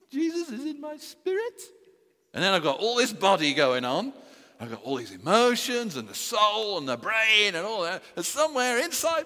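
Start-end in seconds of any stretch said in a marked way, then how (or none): 0.1-1.6 tiny little put-on voice, very high. A speaker describing being born again, saying this in a very high voice. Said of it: "So use a very high voice".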